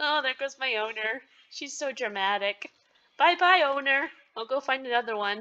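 mock cat voice, giggled and laughed through. Describing a cat watching its owner, speaker voices the cat while laughing. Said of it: "I shouldn't laugh".

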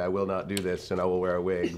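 normal talking voice

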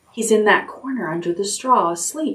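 usual speaking voice

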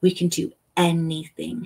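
ordinary talk

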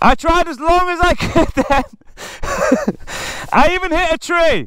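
very high, breathless panting delivery. Speaker describes trying as long as they could, out of breath, panting. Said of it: "I'm panting".

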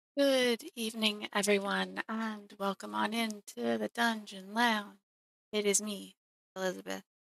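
sleepy, drowsy voice. Opening the Dungeon Lounge and greeting everyone, sounding sleepy. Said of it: "Sorry if I sound a little sleepy".

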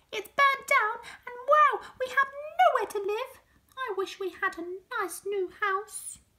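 very high, shrill, piping little mouse squeak. Narrator reading a children's story, voicing the mother mouse in a squeaky mouse voice. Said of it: "squeaked the mother mouse".

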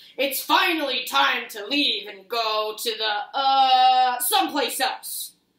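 big, loud, booming storybook giant voice, drawn-out "the". Narrator reading a dinosaur story, Papa Dinosaur speaking in a loud booming voice. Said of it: "said Papa Dinosaur in his loud, booming voice".

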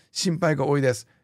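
ordinary talk

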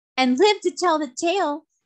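high, merry, teasing, mischievous cry. Trot answers Cap'n Bill after seeing a mermaid, crying out mischievously. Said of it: "she cried, her eyes dancing with mischief".

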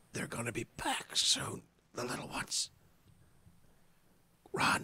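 gurgling, bubbly, burbling whisper. Voicing a woman with barely any energy whispering into your ear, burbly bubbling whisper. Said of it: "the sort of burbly, bubbling whisper".

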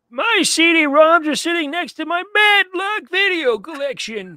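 put-on shrill, loud, high-pitched elderly geezer voice. Asked by a co-host to read this line aloud, in an old man voice. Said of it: "read this in your old man voice".

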